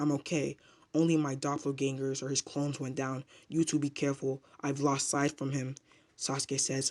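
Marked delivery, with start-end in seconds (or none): none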